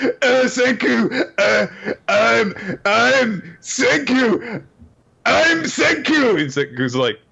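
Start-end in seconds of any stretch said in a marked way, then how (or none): 0.0-6.4 put-on overly emotional voice, higher pitch. Retelling a scene where Taiju can't make sense: imitating Taiju, put-on broken-up emotional voice. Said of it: "'cause he's so broken up and emotional".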